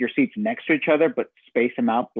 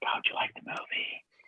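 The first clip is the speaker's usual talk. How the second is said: hushed, soft, breathy whisper. Retelling asking his wife about the movie after leaving the theater: retelling a whisper. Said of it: "I just kind of whispered to my wife".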